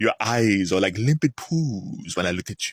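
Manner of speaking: put-on vampire character voice with Hungarian accent. Imitating how Bela Lugosi talks as Dracula: Bela Lugosi Dracula voice. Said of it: "my favorite line".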